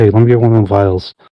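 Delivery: quick, fast, sneaky stage whisper. Player's character nudges Ignacio while she turns away, in a very hushed tone. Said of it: "in a very, very hushed tone be like".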